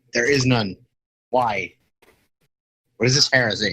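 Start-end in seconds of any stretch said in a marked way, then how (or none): none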